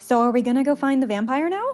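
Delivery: eager, keen tone. A tabletop player, in character, asks another character a question; excited. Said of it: "It's kind of excited".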